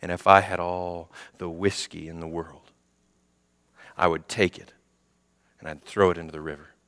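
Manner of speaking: very quiet, low, dropped-down dramatic voice. Retelling a man on stage who drops his voice for dramatic effect: retelling a lowered voice. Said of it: "instead of raising his voice again, he lowers and he says".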